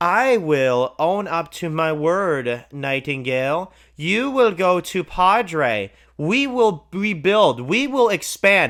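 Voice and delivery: dopey, silly, stupid put-on voice. Speaker mimics a woman who sits there talking: imitating her in a stupid voice. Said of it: "She literally sits there with this stupid voice".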